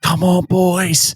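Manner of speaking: fired-up, high, slow, drawn-out rallying yell.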